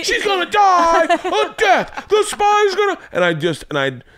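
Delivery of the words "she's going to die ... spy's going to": put-on screaming comic voice, higher pitched. Retelling reading a children's book to daughters: Sam Kinison voice. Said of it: "I'd read it like, um, Sam Kinison".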